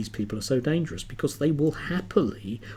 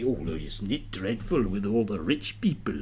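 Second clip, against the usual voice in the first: poorly done, low-pitched, fake Scottish accent; 5 semitones lower, 3 dB quieter than usual. Mocking a commentator on a TV channel, in a bad Scottish accent. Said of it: "that's a bad Scottish accent".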